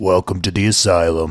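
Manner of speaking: rasping, grainy, growling tough-guy voice. Retelling what a tattooed man at a poker table said: raspy voice. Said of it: "in a raspy voice".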